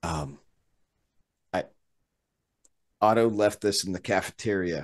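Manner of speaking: very quiet, barely there half-whisper. Speaking in character at a door after waking someone: half-whispering. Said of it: "You don't have to whisper".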